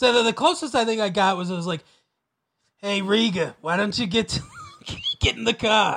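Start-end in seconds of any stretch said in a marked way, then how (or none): 2.8-6.0 generic put-on New York accent, slower. Speaker shows the closest they got to an Australian accent: generic New York accent. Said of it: "it's just generic New York is as close as I can get".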